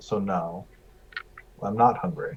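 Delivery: muttering under breath. Answering a table question in character, said under the breath. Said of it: "I will say under my breath".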